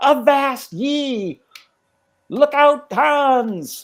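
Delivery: harsh grating shout. Game master voicing a pirate parrot warning the octopus; loud grating yell. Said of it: "a loud sort of grating voice yells out".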